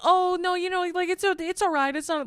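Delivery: very high, frantic, panicked tone. Retelling how everyone on set reacted: imitating people panicking. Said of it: "everyone starts, like, panicking".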